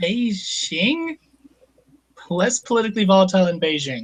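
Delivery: put-on doubting, incredulous tone laced with sarcasm. Retelling how a character in a comic panel reacts: imitating a sarcastic tone. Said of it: "As being sarcastic".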